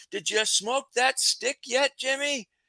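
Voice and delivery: mock very high, hollered shout. Telling how a man who gave him a cigar yelled to him downtown: retelling a yell across the street. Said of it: "he just yells out".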